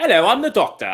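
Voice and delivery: loud, horrible, put-on British accent laid on thick. Introducing oneself as the Doctor: horrible British accent as the Doctor. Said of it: "and a horrible British accent".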